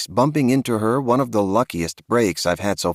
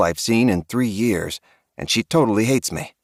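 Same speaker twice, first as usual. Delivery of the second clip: ordinary delivery, nothing marked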